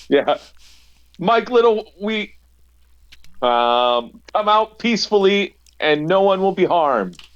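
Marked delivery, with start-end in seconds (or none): 1.2-7.1 high-pitched yelling with a long drawn-out um. Calling out in character toward the house: yelling out to a house. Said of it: "I'm gonna yell out to the house".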